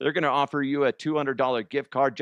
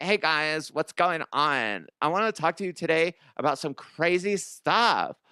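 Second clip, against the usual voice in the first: put-on Californian accent; 3 semitones higher than usual. Ranking accents, showing the California hills type: put-on California accent. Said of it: "the California hills type accent would be terrible. Like".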